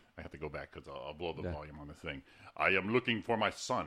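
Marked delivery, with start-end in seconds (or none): 2.6-3.9 stately royal pronouncement voice. Speaker showing off impressions to another speaker; King Jaffe Joffer impression. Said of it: "you have to do all teeth when you do King Jafir".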